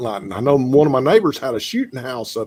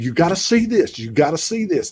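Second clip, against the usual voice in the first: urgent, excited yelling; 4 semitones higher than usual. Retelling calling someone outside to see lights: imitating yelling a name. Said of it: "I'm just yelling her name over".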